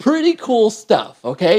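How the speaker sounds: real enthusiasm, swooping. Showing how to add a resource to a side menu, the speaker sounds excited. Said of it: "You can hear the excitement in my voice".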